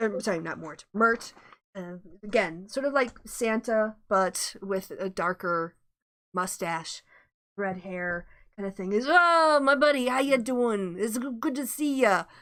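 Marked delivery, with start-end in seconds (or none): 8.9-12.2 loud, raised voice in put-on New York accent. Voicing Mert greeting his buddy, in Mert's New York accent. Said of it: "I got to get my New York accent on you".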